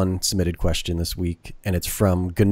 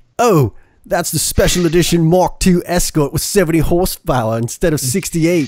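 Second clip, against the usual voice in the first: put-on, pitched-up British accent; 8 semitones higher, 4 dB louder than usual. Reading out a message quoting British car fans: put-on British accent. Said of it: "I wonder if he meant to do the accent".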